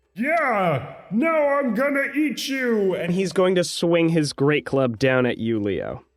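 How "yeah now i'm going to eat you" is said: high, drawn-out angry roar, "yeah" stretched out. Voicing a Cyclops hit by a player: angry roar. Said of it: "he just kind of roars angrily and says".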